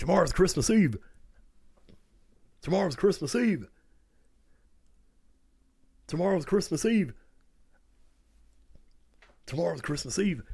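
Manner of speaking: overcome, repeating over and over. Retelling saying it to parents, imitating sounding all overcome. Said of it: "Trying to sound all overcome".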